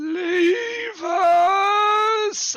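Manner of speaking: very high-pitched, very loud, ghostly shriek. A game narrator voicing a skeletal prisoner's ghost; shrieking ghost voice. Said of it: "as it shrieks out and says".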